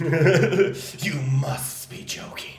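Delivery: slow mock villain voice through laughter, mock-serious.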